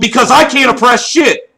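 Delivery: angry shout. Arguing with another speaker who keeps trying to cut in: yelling. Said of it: "who are you yelling at?".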